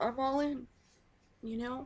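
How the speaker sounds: very high, tearful, drawn out, near crying. Telling listeners what to expect, on the verge of tears. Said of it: "I knew I was gonna cry".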